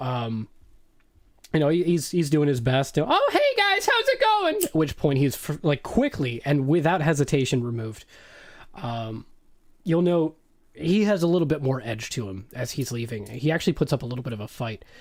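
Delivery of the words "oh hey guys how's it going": very high, too-friendly, chummy neighbor voice. Voicing a halfling who walks in: overly friendly sitcom neighbor voice. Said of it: "sitcom with the neighbor that's a little too friendly".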